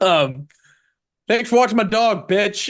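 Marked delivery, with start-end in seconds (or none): 1.3-2.7 put-on loud, raised, rip-roaring drunk Boston accent. Quoting a character's big line from the show, Milly Alcock's Boston accent. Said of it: "American accent, Boston accent".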